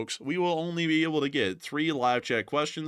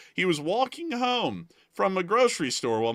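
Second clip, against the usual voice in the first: sudden voice crack, jumping high mid-sentence; 6 semitones higher, 3 dB louder than usual. Telling a story about a guy he once knew, voice cracking. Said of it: "my voice just cracked right there".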